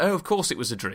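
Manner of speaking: plain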